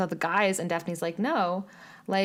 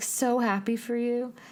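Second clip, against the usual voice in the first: slow, fake, gross gushing cheer; 4 semitones higher than usual. Mocking a character's fake line from the show: imitating fake happiness. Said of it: "so fake and gross".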